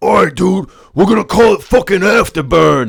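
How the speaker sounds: put-on dumb dude-bro accent. Picturing a dude in an office naming something, in a dumbass writer accent. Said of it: "What kind of accent is that?".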